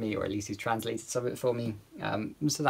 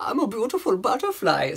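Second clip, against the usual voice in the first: awful exaggerated German accent, very high, swooping pitch; 11 semitones higher, 6 dB louder than usual. Explaining how speaking german always slips into this, in a really awful accent. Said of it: "sort of really awful accent".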